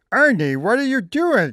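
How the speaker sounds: very high, puppet-style voice. Showing off Muppet voices, doing Bert talking to Ernie: Bert voice. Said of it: "And Bert would say".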